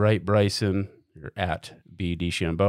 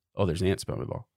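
mock, acted-out joking tone; 5 dB quieter than usual. Retelling a golfer joking to the caddy at his ball: retelling a joking remark. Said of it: "he jokingly says".

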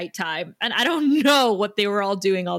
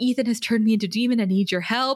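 put-on gentle soothing voice. Retelling how a demon tries to wake someone: imitating Giles speaking gently. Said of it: "he's being very gentle".

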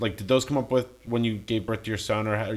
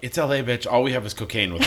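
usual speaking voice

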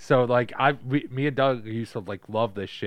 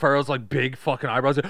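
ordinary talk, nothing marked

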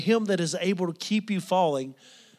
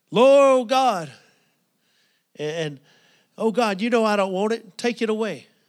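put-on, loud crying-out voice; 4 semitones higher, 5 dB louder than usual. Retelling how a woman kept praying before the minister, imitating someone crying out. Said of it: "she just kept crying out".

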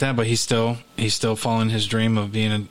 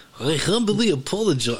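put-on Russian accent, pitched up; 7 semitones higher than usual. Repeating an apology while others comment on the voice: russian accent. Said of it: "that does sound Russian".

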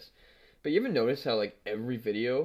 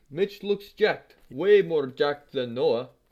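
loud, exaggerated put-on Russian accent; 4 semitones higher, 6 dB louder than usual. Dared to do an accent, speaker attempts a Russian accent.

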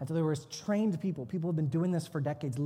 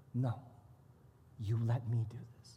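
thick, heavy put-on Brazilian accent, low and soft; 5 semitones lower, 6 dB quieter than usual. Retelling a moment with a woman from Brazil, the speaker imitates a heavy Brazilian accent. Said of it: "she was from Brazil, heavy accent".

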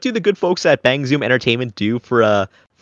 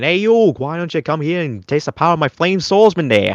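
pitched-up cartoon dub-style voice; 5 semitones higher than usual. Talking about old anime dubs, the speaker quotes a line in Joey Wheeler dub voice. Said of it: "you get like a Joey Wheeler from Yu-Gi-Oh! Saying".

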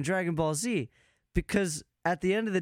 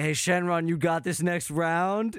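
fake laid-back bro voice. Imagining a casual exchange with a dragon: imitating Goku as a bro. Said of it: "just Goku being like".

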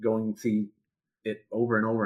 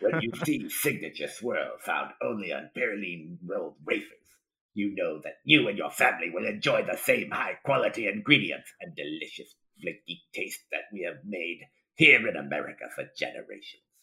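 villainous emperor voice; 3 semitones lower than usual. Reading a wafer package label aloud, in a Palpatine voice. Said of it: "just read the label as Palpatine".

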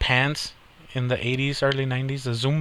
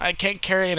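mock overdramatic kid whining, higher pitch; 5 semitones higher than usual. Retelling a kid's complaint about a heavy candy bag: imitating an overdramatic kid. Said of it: "they are over dramatic about shit like that".

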